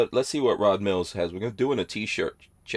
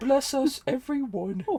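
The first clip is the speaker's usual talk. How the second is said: very high, tiny voice. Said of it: "[name] voice? You do?".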